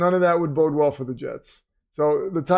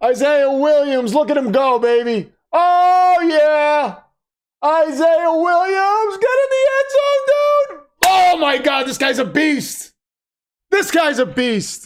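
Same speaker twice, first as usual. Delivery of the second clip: screaming loudly with pure excitement; 11 semitones higher, 6 dB louder than usual. Watching a football game, cheering on a player, screaming excitedly. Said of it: "Sorry, I'm screaming in your ear".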